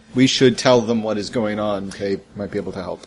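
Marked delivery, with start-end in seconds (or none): 1.9-3.1 thick, heavy, laid-on dripping sarcasm. Speaking in character about others who might help: heavy sarcasm. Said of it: "it's so much sarcasm".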